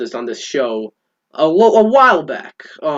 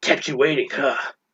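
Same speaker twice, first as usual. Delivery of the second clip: soft, hushed put-on character voice; 6 dB quieter than usual. Wondering how Oscar Isaac will sound in the role, try doing the Snake voice yourself. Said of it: "doing the Snake voice".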